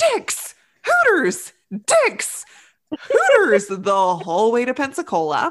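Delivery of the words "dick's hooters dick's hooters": yelling loudly, over and over. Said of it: "you would yell".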